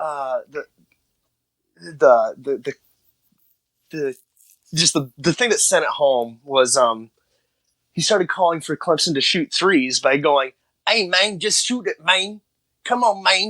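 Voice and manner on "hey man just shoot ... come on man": put-on weird, high-pitched caricature Spanish-sounding accent.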